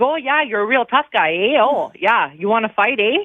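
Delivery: put-on Midwestern accent, trash-talking tone. Retelling a mic'd-up player talking trash to other hockey guys: imitating Steve's Midwestern accent. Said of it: "Midwestern accent".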